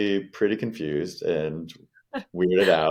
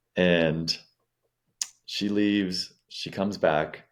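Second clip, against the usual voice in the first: plain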